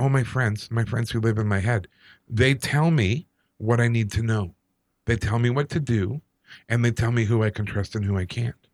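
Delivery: ordinary talk, nothing marked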